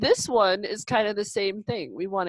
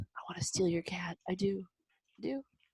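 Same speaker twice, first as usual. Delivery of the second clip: hushed, eerie, very quiet put-on voice; 11 dB quieter than usual. Speaker joking to the other speaker about their cat: creepy voice. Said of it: "say that in the creepy voice".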